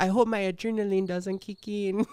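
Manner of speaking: put-on wild, over-the-top Hungarian accent, pitched high. Retelling what the opponent said before the fight: imitating a crazy Hungarian voice. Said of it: "on her crazy ass fucking Hungarian voice".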